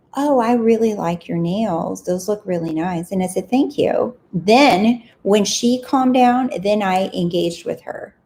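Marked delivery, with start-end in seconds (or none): 0.1-3.1 mock honeyed, sugary sweet tone. Retelling what a woman seated next to her said: imitating a sweet voice. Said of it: "with a sweet voice".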